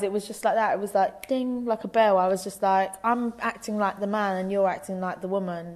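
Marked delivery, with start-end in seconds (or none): none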